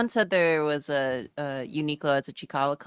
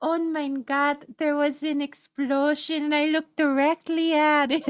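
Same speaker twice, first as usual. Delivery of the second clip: put-on very high small boy voice with German accent; 10 semitones higher than usual. Describing a character who got bonked near an explosion: little German boy accent. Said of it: "he speaks entirely in like no little German boy accent".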